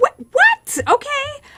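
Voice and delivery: very high, loud, baffled squeak.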